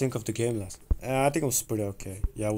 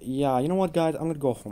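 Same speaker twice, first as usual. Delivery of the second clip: embarrassed, pitched-up tone; 5 semitones higher than usual. Giving up after being turned down for a date: embarrassed. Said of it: "I'm very embarrassed".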